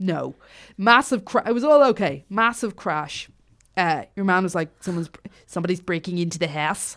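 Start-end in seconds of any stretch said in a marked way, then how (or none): 4.8-7.0 put-on South African accent sliding toward Australian. Retelling what a man said during a break-in: put-on South African accent. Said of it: "you're supposed to be South African".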